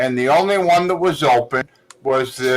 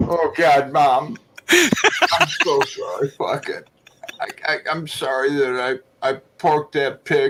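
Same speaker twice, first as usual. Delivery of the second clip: slow, fake sobbing put on for show. Asked to show crying from acting days: fake crying on request. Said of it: "can we see a little example of you crying?".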